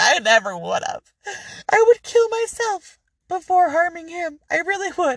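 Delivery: very high, tearful, crying pleading voice. Retelling a wife's denial to questioners: imitating someone crying. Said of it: "And she's crying".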